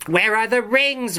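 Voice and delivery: very high, insistent, commanding tone. Guenevoc stares down at Melian, demanding. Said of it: "Guenevoc demanded".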